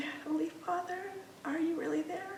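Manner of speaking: high, soft, scratchy little voice. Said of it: "in this scratchy little voice from her surgery".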